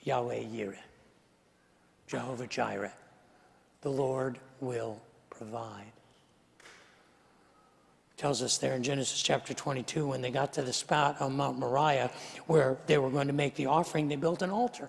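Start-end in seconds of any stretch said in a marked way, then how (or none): 0.0-5.9 acted clenched teeth, much quieter and lower. Retelling Abraham's words to Isaac on the hill, acting through clenched teeth. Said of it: "with clenched teeth".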